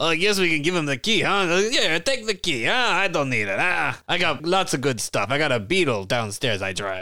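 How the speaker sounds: high, vague put-on foreign accent, broken English. Game master voicing a dragon who drives a Beetle, vague foreign-accented dragon voice.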